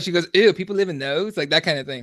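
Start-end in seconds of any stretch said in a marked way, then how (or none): none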